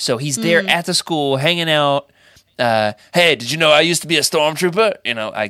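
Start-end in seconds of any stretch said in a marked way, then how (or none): 3.1-5.0 put-on British accent sliding into Australian accent. Imagining Finn as a combat instructor at the school, Finn voice, British turning Australian. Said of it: "I was starting with the British accent and then I went Australian".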